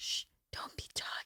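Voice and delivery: hushed, breathless whisper with a shush. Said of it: "and then they were like".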